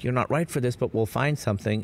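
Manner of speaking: plain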